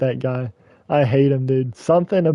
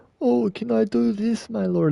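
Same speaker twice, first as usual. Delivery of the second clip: put-on Scottish or Irish accent, pitched higher; 8 semitones higher than usual. Mocking an annoying game character's lines: imitating Bacchus, Scottish or Irish accent. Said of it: "get your Scottish or Irish self out of here".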